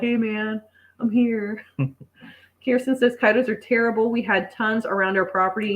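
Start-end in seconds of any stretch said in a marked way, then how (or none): 0.0-1.6 very slow, drawn-out, laid-back stoner voice. Describing how possums just roam around, speaker voices a possum in a stoner voice. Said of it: "Like he's the stoner of Walla".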